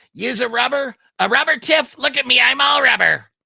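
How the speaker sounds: very high, loud, raspy evil doll voice. Discussing Chucky and Tiffany having a kid, speaker does a Chucky voice. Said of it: "there's my Chucky".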